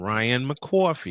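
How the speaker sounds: put-on accent from New York. Retelling a slip of the tongue on the show: New York accent. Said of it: "I spit out in my New York accent".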